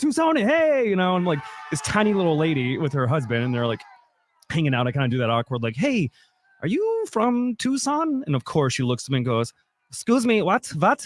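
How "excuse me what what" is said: heavy put-on German accent, pitched high. Retelling how a tiny tourist lady from Germany answered him, super German accent. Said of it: "like super German accent".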